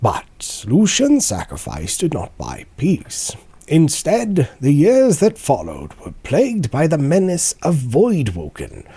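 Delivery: put-on nature documentary narrator voice. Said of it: "Animal Planet voice again".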